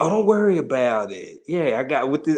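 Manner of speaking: put-on DC-area regional accent. Imitating Frank reassuring someone, in his accent: imitating Frank's DMV accent. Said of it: "Frank hit you with this accent".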